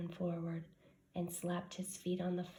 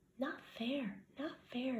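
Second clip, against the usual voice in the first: high-pitched hissing creature voice; 6 semitones higher than usual. Narrator reading Gollum upset at Bilbo's question, hissing Gollum voice. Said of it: "he hissed".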